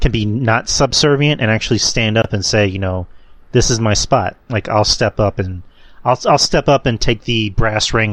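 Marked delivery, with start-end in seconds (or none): none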